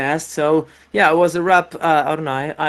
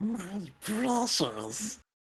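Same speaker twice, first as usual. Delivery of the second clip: very hushed, breathy creature voice, nearly silent; 4 semitones higher, 15 dB quieter than usual. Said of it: "I did th- that voice".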